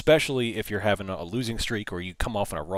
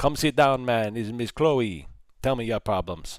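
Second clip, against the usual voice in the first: terrible fake Jamaican accent; 3 semitones higher, 3 dB louder than usual. Denying he can predict anything, speaker slips into a terrible Miss Cleo Jamaican accent. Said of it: "That was probably a terrible accent".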